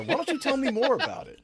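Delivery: very high, gushing, excited presenter voice.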